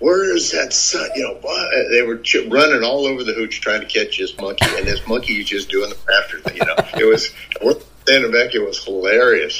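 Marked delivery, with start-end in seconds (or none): 0.0-1.1 put-on very high, ragged, rasping, slow, drawn-out shriek. Retelling how they came out of their hooch chasing a monkey: imitating someone screaming. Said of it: "came out of there screaming".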